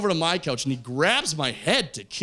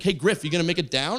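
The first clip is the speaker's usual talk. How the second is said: ordinary talk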